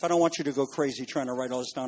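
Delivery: quick, soft, rushed speech. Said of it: "I'm talking fast".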